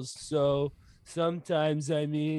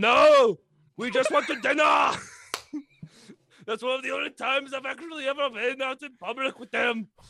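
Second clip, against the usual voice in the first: loud put-on Austrian-accented voice. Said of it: "that supposed to be Arnold Schwarzenegger during Terminator".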